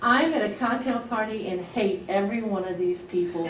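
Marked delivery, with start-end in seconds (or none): none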